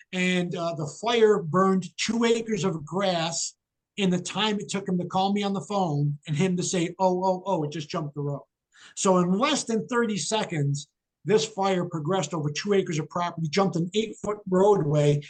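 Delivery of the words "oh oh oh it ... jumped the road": usual speaking voice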